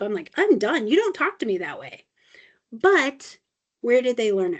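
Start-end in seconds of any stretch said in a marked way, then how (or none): 0.4-2.0 put-on exasperated, fed-up scolding tone. Retelling their answer to sarcastic back talk, retelling a fed-up scolding. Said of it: "it was to the point where I was fed up".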